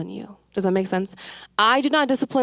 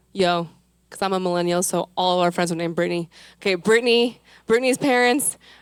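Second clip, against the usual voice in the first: ordinary talk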